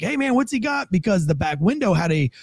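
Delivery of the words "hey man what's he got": shouted, pitched very high. Retelling shouting to a man confronting a suspect, retelling a yell. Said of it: "And I'm like yelling".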